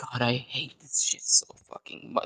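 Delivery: whispered, grumbling mutter under the breath. Speaker acts out a woman talking to herself, imitating her mumbling under breath. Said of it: "Like mumbling under her breath".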